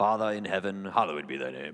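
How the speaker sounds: very low put-on Elizabethan English accent. Showing how prayer slips into Elizabethan English, English accent. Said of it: "where did that English accent come from?".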